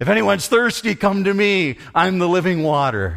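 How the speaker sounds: booming call, loud and high. The speaker acts out Jesus calling out near the Supreme Court, in a booming voice. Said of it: "Jesus is outside with a booming voice".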